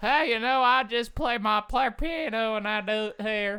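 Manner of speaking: loud, very high put-on backwoods cowboy voice. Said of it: "cowboy is like the".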